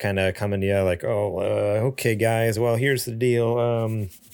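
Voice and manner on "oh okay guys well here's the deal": mock sheepish, nervous stuttering. Imitating an imagined announcement, hat in hand: imitating sheepish stuttering. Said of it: "kinda stuttering over themselves".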